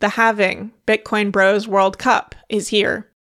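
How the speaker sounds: usual speaking voice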